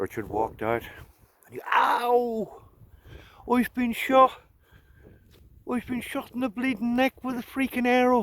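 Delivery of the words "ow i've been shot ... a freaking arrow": put-on high, loud, pained cry in an Irish accent. Retelling a movie scene with Sean Connery, doing Richard's Irish accent. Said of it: "with his Irish accent".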